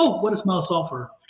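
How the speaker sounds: ordinary talk, nothing marked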